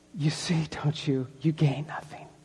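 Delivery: soft, low, mocking whisper.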